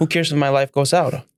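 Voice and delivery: ordinary talk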